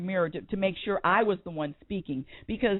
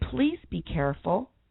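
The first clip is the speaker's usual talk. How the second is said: mock very calm, sweet, serene tone. Retelling words to a road-rage driver who nearly caused an accident, calm sweet voice. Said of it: "in a very calm, sweet voice".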